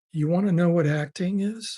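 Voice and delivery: ordinary talk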